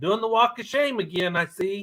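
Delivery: mock, high yell, hollered as if from far off. Retelling calling out to a cat crossing the pasture: retelling a yell. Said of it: "I yelled out".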